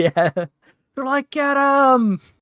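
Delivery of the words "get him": high, cheering crowd yell. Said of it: "they're cheering very loudly right now".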